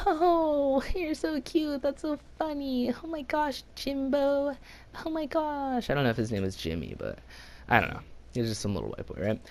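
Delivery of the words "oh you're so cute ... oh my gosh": very high, doting cooing voice. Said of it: "Parents are, you know".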